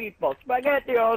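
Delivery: loud, over-the-top, exaggerated fake Italian accent. Joking around, talking like an Italian: exaggerated Italian accent. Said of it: "I am talking like an Italian, a very racist Italian accent".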